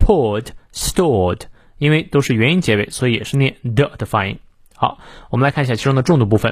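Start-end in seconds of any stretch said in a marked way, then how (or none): 0.0-1.4 British poured and stored with no r. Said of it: "如果是英式发音呢".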